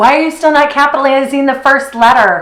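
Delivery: put-on annoyed voice. Acting out a reaction the speaker says they won't have: mock-annoyed voice. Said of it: "in my annoyed voice".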